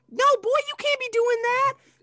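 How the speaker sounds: mocking, high, loud, squealing gossipy girl voice.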